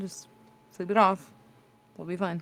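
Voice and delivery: quiet, soft, hushed murmur held close. Speaking in character into a Pokeball, speaking softly. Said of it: "I'm just gonna say softly into the Pokeball".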